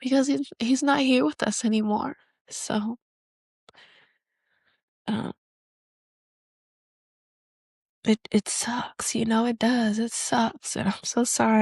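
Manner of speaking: tearful speech, crying while talking. Talking about missing someone no longer with the family, crying while talking. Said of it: "I'm just crying right now".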